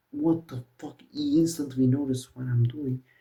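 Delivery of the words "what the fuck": mock angry, fatherly voice. Retelling when Dad opened the door and got super mad, imitating an angry dad. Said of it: "gets super mad".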